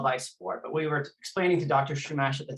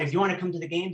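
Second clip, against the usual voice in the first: thick, heavily laid-on put-on French accent; 7 dB quieter than usual. Retelling what a man who threatened you on the phone said, imitating a very strong french accent. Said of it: "he said in a very strong French accent".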